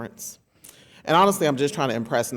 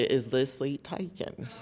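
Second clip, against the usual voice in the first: soft, deep, heavy Southern drawl twang; 7 dB quieter than usual. Telling listeners how today's title must be said, Forrest Gump Southern twang. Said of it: "you must add a very deep Southern twang".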